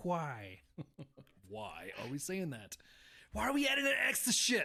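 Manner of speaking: sing-song animated cartoon voice swooping up and down. Complaining about people adding an X to words, in a Stewie voice. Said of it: "I'm gonna sound like Stewie on, on Family Guy".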